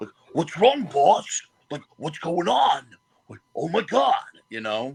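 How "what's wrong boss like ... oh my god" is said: dim, dopey, dumb henchman voice, pitched up. Describing favorite roles to play, showing the dumb bad guy voice. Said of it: "but like the dumb bad guy".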